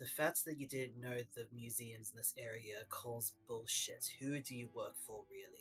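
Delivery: very low voice. Alistair approaches Vincent Castle while two others bicker, in a very low voice. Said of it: "speak in a very low voice".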